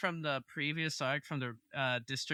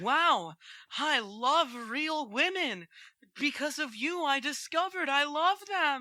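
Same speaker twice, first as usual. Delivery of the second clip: put-on voice, pitched very high; 9 semitones higher, 4 dB louder than usual. Imitating an anime guy who discovers he loves real women: voice like Deku. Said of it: "I thought I was hearing a little bit of Deku".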